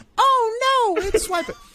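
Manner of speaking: very high cartoon girl voice, "oh" stretched. Retelling a cartoon scene, doing a Dora the Explorer impression. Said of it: "I love the Dora impression".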